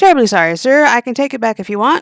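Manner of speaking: courteous, polite customer-service voice. Playing a server answering a complaining customer, in a customer service voice.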